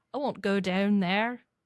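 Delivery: put-on Irish accent. Asked to try a line in a Scottish accent, it comes out in an Irish accent. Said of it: "That was Irish".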